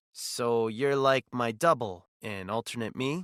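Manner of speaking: ordinary delivery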